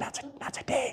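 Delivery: hushed whisper, barely audible. Retelling telling demons no while others nearby shouldn't hear: saying it real quiet. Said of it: "I said it real quiet".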